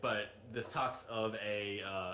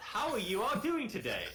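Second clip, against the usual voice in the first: booming, jubilant, ringing voice, very high pitch; 12 semitones higher, 4 dB louder than usual. Voicing a glowing magic orb greeting the players: jubilant loud voice. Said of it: "jubilant voice rings out".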